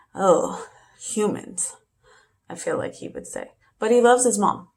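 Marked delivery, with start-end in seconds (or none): 0.2-1.8 voice full of disgust. Voicing what the pet would say, in Pickles' disgusted voice. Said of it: "Pickles would be disgusted by everything".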